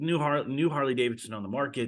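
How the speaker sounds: normal talking voice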